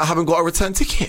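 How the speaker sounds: bad, clumsy, high, woeful American accent. Retelling what she said, in a bad American accent. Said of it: "that's my American accent".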